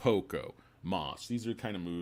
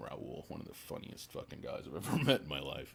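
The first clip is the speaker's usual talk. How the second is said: ordinary talk, nothing marked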